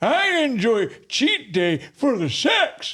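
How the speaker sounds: put-on very high elderly-man voice. Saying a given line in a chosen voice during a voice game: old man voice. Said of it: "I have to use my old man voice".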